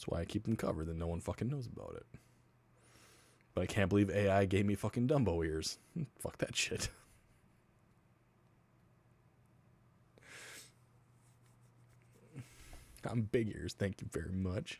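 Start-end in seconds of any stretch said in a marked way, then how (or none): 3.5-14.8 voice dripping with disdain and scorn. Reacting to being given big ears by ai: disdainful tone. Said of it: "you can hear the disdain in my voice".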